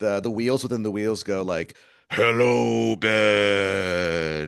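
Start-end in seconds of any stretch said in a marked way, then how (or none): 2.1-4.5 really scary, creepy put-on voice, a name drawn out. Recounting what the wheels within the wheels say, imitating a really scary voice. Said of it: "they talk with like a really scary voice".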